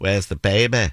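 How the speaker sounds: Mancunian accent with northern English vowels. Showing how a phrase sounds in different northern cities, in a Manchester accent. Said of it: "And in Manchester, you'd say".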